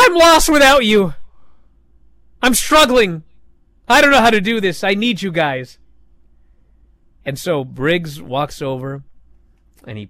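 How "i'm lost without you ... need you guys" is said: sudden, high, loud screaming outburst. Storyteller acting out a young man's outburst as someone leaves: retelling a scream. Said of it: "this poor virgin suddenly screams".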